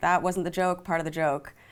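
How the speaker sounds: ordinary delivery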